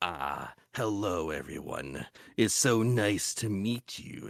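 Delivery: low, slow, bug-like creature voice. Explaining how they get into character as a game master, bug creature character voice. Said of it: "a bug thing".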